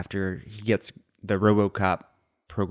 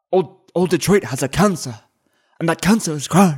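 put-on raised Irish accent, pitched up; 9 semitones higher, 5 dB louder than usual. Quoting an early line from the old man: the Old Man impression, Irish accent. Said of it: "this very interesting cadence and, and vocal sound".

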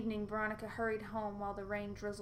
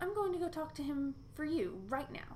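high, mocking, teasing jeer; 6 semitones higher than usual. Veronica's best friend speaks to her about her crush; jeering. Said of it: "she jeered".

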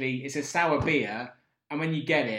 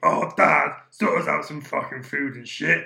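loud, gruff, creaky, rough talking-dog voice; 6 dB louder than usual. Describing his dog, voicing how his dog talks. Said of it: "My dog talks like this".

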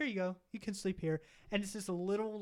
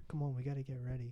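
put-on soft-spoken creepy voice, lower pitch; 7 semitones lower, 4 dB quieter than usual. Retelling a movie scene, imitating a character: imitating a soft creepy voice. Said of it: "he always talks really soft like that".

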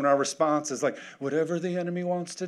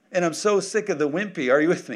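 usual speaking voice

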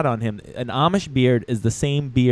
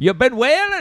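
put-on impression voice with a Maine accent. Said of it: "Do your Trump from Maine".

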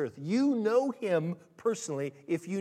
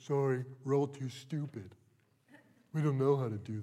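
low, dim-witted, dopey put-on voice; 5 semitones lower, 3 dB quieter than usual. Imagining being asked to mediate after service, speaker replies in a stupid voice. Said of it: "as stupid as the voice I just put on".

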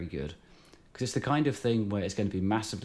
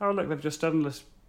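put-on commercial announcer voice, pitched up; 7 semitones higher than usual. Quoting a question about a video in a put-on voice: put-on GW voice. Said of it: "That's not the voice I should use for them".

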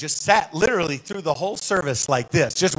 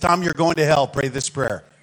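mock-rough, harsh, blunt delivery. Retelling how a man shook his hand and spoke to him, imitating a rough, blunt delivery. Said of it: "that was really rough".

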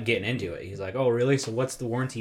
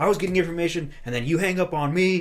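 heated, high, angry yelling; 7 semitones higher, 4 dB louder than usual. Retelling a phone call where a man yelled after being hung up on, retelling someone yelling. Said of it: "he was yelling at him".

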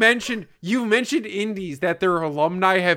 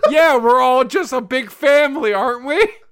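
gleeful, cheery, oblivious, joyous, high raised voice; 5 semitones higher, 5 dB louder than usual. Retelling how Ben answered without reading the situation, imitating Ben's joyous voice. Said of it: "Ben with a joyous voice goes".

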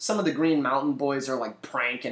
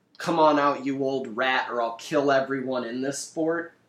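usual speaking voice

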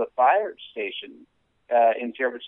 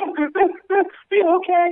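frantic, freaked-out voice. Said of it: "helicopter moms".

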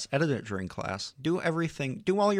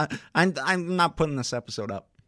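ordinary talk, nothing marked

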